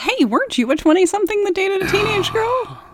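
very high, playful, sing-song teasing tone. Turning the other speaker's remark back on them; teasing. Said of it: "I'm teasing you".

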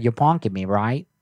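put-on Wisconsin accent. Retelling a prank-call lady's reply, imitating a Wisconsin accent. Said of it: "she had like a Wisconsin accent".

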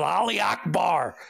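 mock yell, raspy, kept small and restrained. Retelling how a man threw a backpack and ran: imitating someone yelling. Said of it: "yells out".

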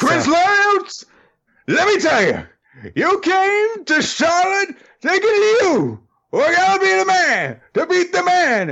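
very high, sing-song, wildly swooping wrestling promo voice. Cutting a wrestling promo at another speaker: Ric Flair impression. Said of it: "Nature Boy Ric Flair".

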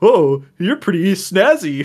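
very drawn-out, slow, high mocking drawl. Imitating a newcomer to the fandom greeting someone: mocking tone imitation. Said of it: "They usually sound a little bit less mocking".

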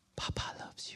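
hushed whisper. Leaning in close beside someone's ear to tell him: whispering. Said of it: "I'll begin to whisper".

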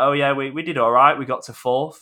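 offhand sarcastic downplaying. Retelling how Steve Cooper played down his Swansea job: imitating Steve Cooper, sarcastic. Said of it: "it was almost a bit sarcastic in the way he said it".

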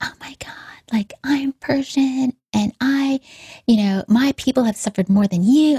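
woman's high-pitched screaming tirade. A woman goes off at the speaker through the car window; retelling her screaming. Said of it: "and just screaming".

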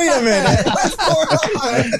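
confused, laughing delivery.

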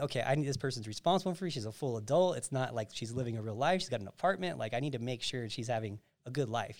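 ordinary delivery

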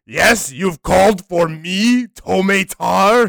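put-on intense, loud, slow, angry German accent, very drawn out. Answering a call to summon a character: Tomatar voice, intense angry German. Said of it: "a very intense, angry German man".

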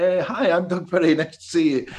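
mock tipsy, half-cut drunken voice. Retelling walking into a pub and answering a guy: imitating own drunken greeting. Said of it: "I drunkenly almost went".

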